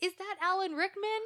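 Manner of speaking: put-on, very high, thrilled, excited yell. Recounting the moment, the speaker retells an excited yell. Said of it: "And then I yelled".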